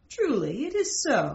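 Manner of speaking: plain reading voice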